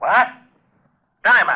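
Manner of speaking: sudden, shrill hollered shout. Hearing Jerome's message about the body, he shouts across the office, yelling. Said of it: "You better watch that yelling".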